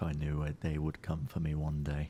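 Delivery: low mumbled muttering, half to oneself. Voicing a character in a game scene: muttering under breath. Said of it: "muttering under my breath".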